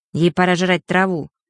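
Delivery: plain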